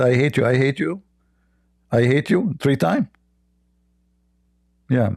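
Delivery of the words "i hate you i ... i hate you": normal talking voice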